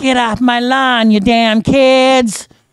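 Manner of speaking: put-on very loud, high old-man scream, "kids" drawn out. Playing an old man in an indie game, screaming at kids, screaming old man. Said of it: "I'm sitting screaming at kids going".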